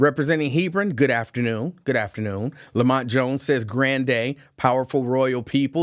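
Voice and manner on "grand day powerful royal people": normal talking voice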